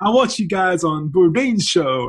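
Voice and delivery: put-on tourist-style American accent. Telling how American visitors came to a restaurant, in a put-on American accent. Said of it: "I don't know if that was a good American accent".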